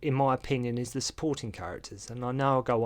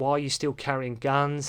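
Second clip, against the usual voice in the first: ordinary talk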